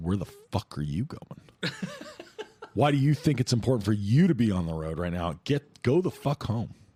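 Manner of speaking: put-on furious rant, high and swooping pitch. Describing getting stuck in traffic, the speaker acts out road rage. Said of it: "I'm like super pissed".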